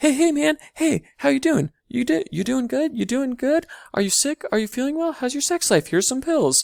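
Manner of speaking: obnoxious, over-friendly voice, pitched very high. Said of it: "It's like really obnoxious".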